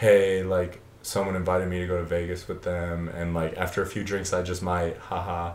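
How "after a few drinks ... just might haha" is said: ordinary talk, nothing marked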